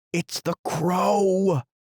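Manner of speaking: shrill alarmed cry, drawn out. Narrator reading Tweedledum's cry as the dark cloud comes, shrill cry of alarm. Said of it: "in a shrill voice of alarm".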